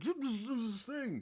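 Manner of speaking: high, slow, mock angry fan yell.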